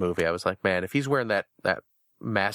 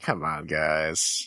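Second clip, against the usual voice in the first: put-on disappointed voice, lower; 5 semitones lower than usual. Voicing a Kylo Ren toy figure scolding pranking coworkers: Kylo Ren as disappointed coworker. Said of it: "He's just kinda like".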